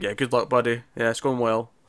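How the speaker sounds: put-on whisper. Describing a script scene where a character whispers while leaving: retelling a whisper. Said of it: "she's whispering".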